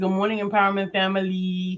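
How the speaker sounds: plain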